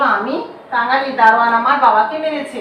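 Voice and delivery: plain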